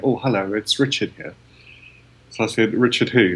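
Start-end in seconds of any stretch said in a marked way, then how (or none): 0.0-1.3 put-on quiet, shy voice. Retelling a phone call, act out the person on the other end: quiet, shy Richard Branson impression. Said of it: "quiet, shy person on the other end of the phone going".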